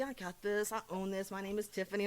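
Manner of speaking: usual speaking voice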